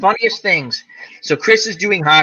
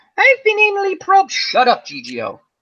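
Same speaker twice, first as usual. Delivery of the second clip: very high, fast, goofy silly voice; 14 semitones higher than usual. Voicing a talking die at the table: silly dice voice. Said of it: "I'm doing my silly dice voice".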